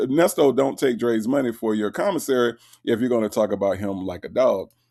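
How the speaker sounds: usual speaking voice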